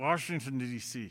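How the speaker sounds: grudging, teeth-gritted, forced through clenched teeth. Hating to say a place name, the speaker says it through clenched teeth. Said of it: "I'm gonna say it with clenched teeth".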